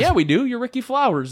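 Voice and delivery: offhand, unbothered, nonchalant tone, very high pitched. Retelling someone's line in a story: imitating a nonchalant tone. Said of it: "real nonchalant".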